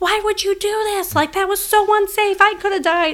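very high, shrill, shrieking yell. Speaker retelling yelling at a man after a mower incident, retelling a yell. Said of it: "I'm yelling at him".

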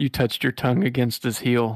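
plain reading voice

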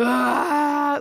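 high, loud sobbing wail. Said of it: "my reaction was full on, sobbing".

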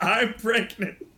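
yell tossed out high. Retelling how Punky Johnson signed off: imitating Punky Johnson yelling. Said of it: "she yelled".

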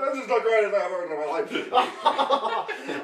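put-on amused voice, laughing and chuckling through the words. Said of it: "the parents are like, they're all laughing".

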